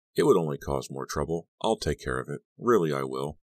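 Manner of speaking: plain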